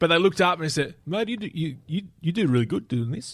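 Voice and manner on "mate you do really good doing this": put-on New Zealand accent, much slower pace. Retelling what the sponsor's main guy told him, in a put-on Kiwi accent. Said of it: "Why do you always go to a Kiwi accent".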